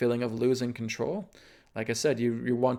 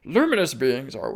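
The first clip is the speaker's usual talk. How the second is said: loud, fumbled, put-on wise old master voice; 7 dB louder than usual. Recalling a Star Wars line to make a point, attempt a failed Yoda impression. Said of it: "I can't do a Yoda impression".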